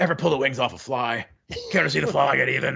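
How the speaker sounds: gritty, grating, rough, creaky put-on growl. Answering a quoted line with more quoted lines, in an Edgar voice. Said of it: "you do a pretty good Edgar voice there".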